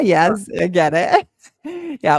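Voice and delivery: laughing through words, slow and loud.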